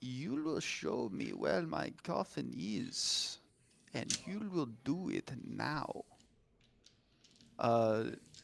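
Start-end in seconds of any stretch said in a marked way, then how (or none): 0.0-6.0 menacing, threatening whisper. Voicing a vampire who leans in to a player's character: whispering menacingly. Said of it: "and whispers into her ear".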